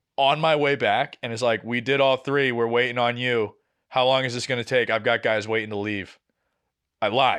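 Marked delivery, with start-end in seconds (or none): none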